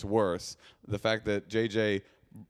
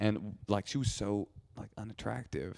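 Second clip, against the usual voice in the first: hushed whisper; 7 dB quieter than usual. Telling a story about someone who might be listening, whispering. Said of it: "I don't know why I'm whispering".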